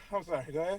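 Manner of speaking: breathless, winded, catching breath while speaking. Apologizing after struggling to get into the car, out of breath. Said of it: "I'm out breath just doing that".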